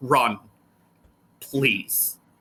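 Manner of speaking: beastlike growl behind the voice. A character looks at all the cultists and speaks, voice with a growl behind it. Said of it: "with a voice that has like it has a growl behind it".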